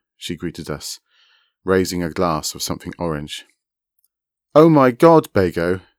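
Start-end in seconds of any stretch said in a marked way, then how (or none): 4.5-5.8 unnecessarily loud, slow, shouted delivery. Narrator reads Rainey greeting Begonia on a video call, unnecessarily loud Skype voice. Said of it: "shouted Rainey in an unnecessarily loud Skype voice".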